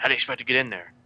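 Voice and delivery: hushed whisper. Voicing a character who whispers a question to another player: whispering in character. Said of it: "he whispers to you".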